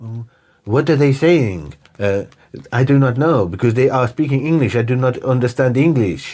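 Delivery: English spoken with a put-on French accent. Retelling a comedy scene's French character: imitating a French accent. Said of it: "but with different accents".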